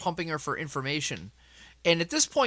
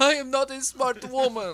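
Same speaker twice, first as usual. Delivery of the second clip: put-on, very high, whimpering sob in broken Russian accent; 10 semitones higher than usual. Retelling how a player's character confessed: imitating Nick's fake crying in broken Russian. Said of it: "in broken Russian, he starts off fake crying".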